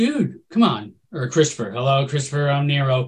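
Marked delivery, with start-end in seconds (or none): 1.7-3.1 flat, monotone delivery with no lift. Mocking an actor's villain line delivery: imitating Eric Bana as Nero, flat delivery. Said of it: "some of his deliveries were".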